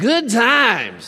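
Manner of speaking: sassy, attitude-laden delivery. Leading a congregation to say the phrase, said with attitude. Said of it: "say that with a little attitude".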